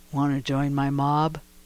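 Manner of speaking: very low, rough, grinding, gravelly rasp. Retelling what a man in line said face to face, in a very low, gravelly voice. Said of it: "in a very low, grovelly voice with his blubbery lips".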